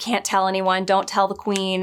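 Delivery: mock begging, pleading voice. Retelling a scene where he begs her to keep quiet: imitating someone begging. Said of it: "he starts begging her".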